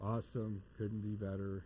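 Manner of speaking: thick deadpan sarcasm, low, flat monotone. Answering how you're doing with thick sarcasm: sarcastic monotone. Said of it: "I lay on the sarcasm thick ... I just try to go monotone and be stupid with it".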